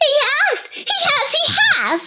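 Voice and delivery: tiny, very high, squeaky squirrel-like creature voice. Reading a story aloud, voicing a young squirrel at the table: squeaky young squirrel voice. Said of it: "it squeaked".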